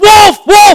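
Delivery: high, loud, panicked, freaking-out yell. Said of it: "So he starts freaking out".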